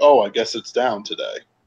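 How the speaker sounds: put-on exaggerated facetiousness. Retelling how someone treated a serious topic, imitating someone overly facetious. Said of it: "I'm being overly facetious about it".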